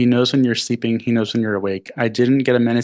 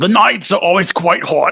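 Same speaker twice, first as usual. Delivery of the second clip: clumsy put-on Australian accent, pitched up; 7 semitones higher, 4 dB louder than usual. Reading aloud a christmas story written by an australian, bad australian accent. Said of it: "that's a bad accent".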